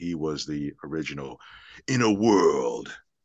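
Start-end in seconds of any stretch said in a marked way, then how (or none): 1.9-2.9 loud, booming movie-trailer voice. Naming a voiceover idol in an interview, do the Don LaFontaine trailer voice. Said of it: "He's the original trailer that voice".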